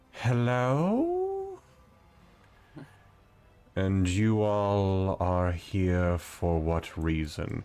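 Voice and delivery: absolutely lovely voice, drawn-out "hello". Game master voicing a voice from the web ball, absolutely lovely voice. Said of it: "you hear an absolutely lovely voice".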